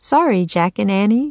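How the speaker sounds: usual speaking voice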